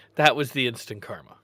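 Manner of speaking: ordinary talk, nothing marked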